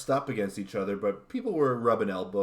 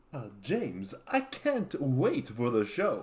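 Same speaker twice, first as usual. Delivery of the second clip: put-on swooping old horror-movie vampire-count voice; 4 semitones higher than usual. Imitating the same guest in turn: Dmitry Kieres impression sounding like Dracula. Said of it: "yours sounds like Dracula".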